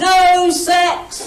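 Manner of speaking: loud, very slow sing-song hawker's yell. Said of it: "I yell at the passing delegates".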